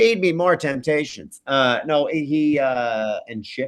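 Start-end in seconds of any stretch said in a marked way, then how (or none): 0.0-1.4 high-pitched cartoonish voice. Voicing a pet cat asking for treats: Roger from American Dad voice. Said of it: "Was that Roger from American Dad you were doing?".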